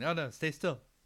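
play-acted, mild, half-hearted yelling cry. Retelling a movie scene where everyone yells at someone: imitating people yelling. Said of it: "everyone yells".

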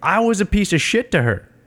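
sudden, high, angry snapping outburst. Speaker retelling a fight between Polly and Rocky, imitating Polly snapping. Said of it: "fucking Polly snaps".

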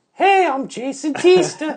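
very high, very loud, very slow shrill voice. Showing a Jason impression: Jason impression. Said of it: "My Jason impression is like".

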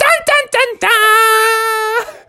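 screaming out, very high-pitched and long. Telling a story about Mommy Frog, voicing the baby swinging from the lights, screaming. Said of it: "Baby was like just screaming out".

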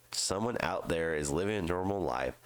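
ordinary delivery

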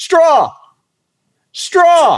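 yelling voice. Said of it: "he starts yelling".

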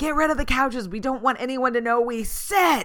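mock shrill, loud, top-of-the-lungs screaming. Describing a viral video of a mother preparing for guests, imitating someone screaming. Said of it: "she's screaming at the top of her lungs".

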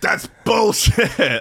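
shouting at a high pitch. Retelling a video of a politician shouting at a worker: Joe Biden shouting. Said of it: "shouting at the dude".

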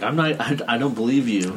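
ordinary talk, nothing marked

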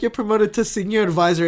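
plain

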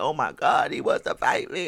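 mock crying, sobbing man's voice. Retelling how a man reacted to being challenged, imitating someone crying. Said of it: "He breaks down crying".

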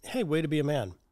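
ordinary talk

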